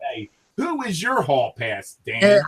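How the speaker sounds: put-on radio DJ announcer voice. Prompted by another speaker, asking himself a question in radio DJ voice. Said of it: "in my best radio DJ voice".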